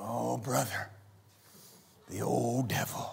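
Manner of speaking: very low, very quiet, very slow, drawn-out murmur. Imitating people talking about the devil: imitating someone speaking quietly. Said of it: "they'll get real quiet".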